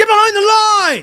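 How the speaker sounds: very high, very loud, shrill scream. Retelling how a store worker screamed about the cart line: imitating a man screaming. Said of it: "this old man with the blue vest screams at me".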